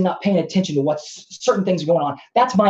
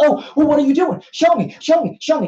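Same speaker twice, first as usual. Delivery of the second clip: put-on patronising, fawning, high condescending needling; 8 semitones higher than usual. Mimicking the other person asking to be shown the work, mock-condescending. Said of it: "you're being condescending".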